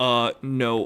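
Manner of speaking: mock terrified tone. Retelling a stranger's proposition, the speaker acts out a terrified refusal. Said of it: "I was so fucking terrified".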